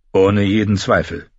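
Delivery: ordinary delivery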